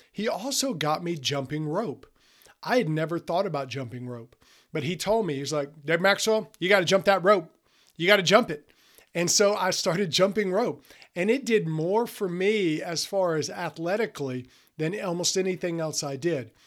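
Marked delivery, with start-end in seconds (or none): 5.9-8.7 loud put-on Southern drawl. Retelling what a football coach always said: imitating Coach Cole's Southern drawl. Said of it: "he had a Southern drawl".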